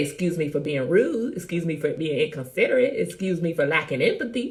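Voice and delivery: ordinary talk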